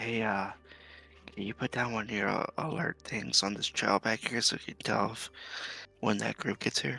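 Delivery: hushed whisper. Asking a party member to set an alarm on the trail, whispering. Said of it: "I'm gonna whisper".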